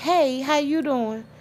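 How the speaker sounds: sweet, dainty little voice. Retelling how a woman greeted the speaker, imitating a pleasant little voice. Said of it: "In this pleasant little voice".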